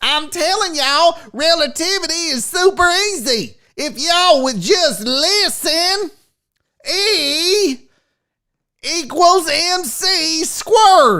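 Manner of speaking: slow, fake South Carolina Southern drawl. Imagining Einstein sounding like he was from South Carolina: Einstein with put-on Southern accent. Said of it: "what if Einstein had a was fucking sound like he was from South Carolina?".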